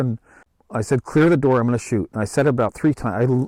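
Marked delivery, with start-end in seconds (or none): none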